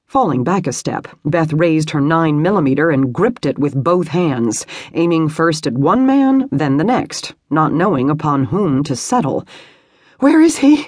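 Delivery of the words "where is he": very high, breathless, winded, gasping voice. Reading Beth's line as she confronts the men: gasping, out of breath. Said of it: "she gasped, so out of breath she could barely speak".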